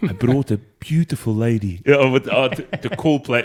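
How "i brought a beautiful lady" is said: laid-on, sketch-style South African accent. Quoting a comedy sketch another speaker just recalled: Aunty Donna South African voice. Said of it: "South African Sams from Auntie Donna".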